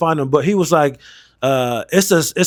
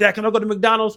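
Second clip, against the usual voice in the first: put-on high, small little-kid voice; 6 semitones higher than usual. Retelling a skit where a little kid in a car asks his dad: imitating a little kid. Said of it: "he's acting like he's a little kid in a car".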